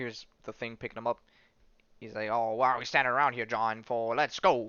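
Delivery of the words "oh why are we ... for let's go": put-on typical old sixties New York accent. Retelling what a character says while picking someone up, in a sixties New York accent. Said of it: "in that like typical like sixties New York accent".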